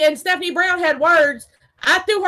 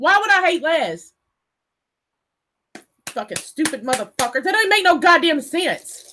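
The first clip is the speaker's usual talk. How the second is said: very angry, furious. Ranting about being called a liar: furious. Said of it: "I'm madder than a motherfucker".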